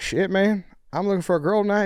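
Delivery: put-on Southern accent. Retelling a kid who spoke to him and a friend in line: thick Southern accent impression. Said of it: "like the thickest Southern accent you've ever seen".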